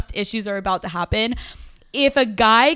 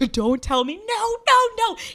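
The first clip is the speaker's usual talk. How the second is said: put-on upset protesting tone, higher; 12 semitones higher than usual. Retelling a friend's reaction to hearing bad news: imitating an upset friend. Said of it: "he is so upset".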